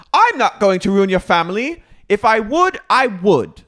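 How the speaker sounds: put-on British accent. Retelling what a cast member said to another: imitating Meredith's British accent. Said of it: "She goes back into a British accent".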